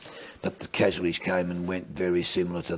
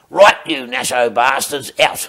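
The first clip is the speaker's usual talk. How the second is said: very loud, high, barked yell; 6 semitones higher, 14 dB louder than usual. Retelling a sergeant ordering servicemen off a bus: imitating a yell. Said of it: "he yelled".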